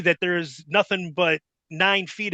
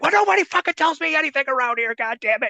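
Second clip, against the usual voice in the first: put-on angry, exasperated, fed-up rant; 8 semitones higher than usual. Retelling a man's reaction to a stunt in the ring, acting out his angry outburst. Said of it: "he storms off all pissed off".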